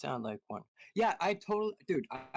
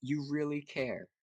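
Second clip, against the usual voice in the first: mock heavy, stretched-out, deeply heartfelt delivery. Retelling what a woman said to the speaker: mock really emotional voice. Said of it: "in like a really, really, really, really, really uh, emotional voice".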